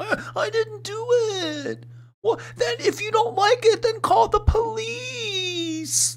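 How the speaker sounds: acted, very high, slow, drawn-out crying whine. Mocking a voice while reacting to a video: imitating a whiny voice. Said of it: "The whiny voice".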